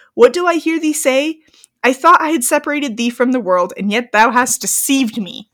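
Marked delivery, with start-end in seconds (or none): none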